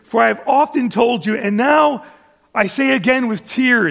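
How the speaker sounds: normal talking voice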